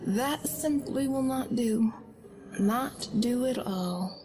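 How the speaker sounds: high, feminine, unnatural-sounding voice. A small hooded figure near the back of the room speaks: high-pitched unnatural voice. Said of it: "The voice was high-pitched, feminine, and carried an air of something unnatural".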